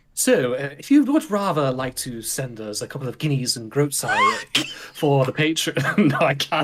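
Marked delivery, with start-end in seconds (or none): 0.8-4.7 over-the-top, laid-on, sing-song exaggerated British accent. Asking listeners to send Patreon support, exaggerated British accent. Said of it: "I would love to do that voice all night".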